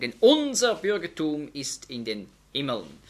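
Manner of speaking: stress on "unser".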